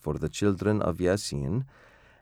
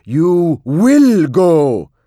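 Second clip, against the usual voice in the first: very high, shrill, booming screaming at full volume; 10 semitones higher, 14 dB louder than usual. Reading a story aloud, a father attacking his child shouts at him: shouting. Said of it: "he shouted".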